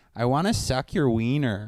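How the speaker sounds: thick, heavy put-on Wisconsin accent. Telling a friend about a girl he met on the road, quoting her in a thick Wisconsin accent. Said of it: "a really thick Wisconsin accent".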